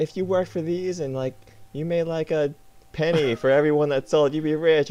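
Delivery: put-on high, young, dazzled kid voice. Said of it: "Is that the Ron Chan child voice?".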